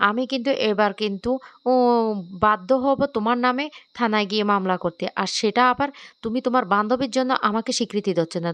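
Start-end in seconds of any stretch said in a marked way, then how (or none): none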